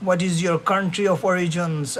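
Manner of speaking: ordinary talk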